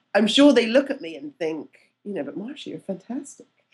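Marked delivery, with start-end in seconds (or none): 2.2-3.4 soft, really bad Scottish accent. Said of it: "that was a really bad Scottish accent".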